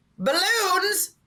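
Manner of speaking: loud yell, high pitched and slow.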